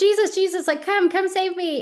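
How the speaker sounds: play-acted, desperate, loud yelling, pitched very high. Retelling the bible story of the blind man calling to jesus, imitating his yelling. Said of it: "he kept like yelling".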